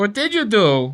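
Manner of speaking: put-on New York accent.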